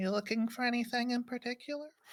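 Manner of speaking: put-on gentle, soft, very high little-girl voice. The narrator voices a girl met on a forest path, soft young girl voice. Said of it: "a soft voice on the path beside you".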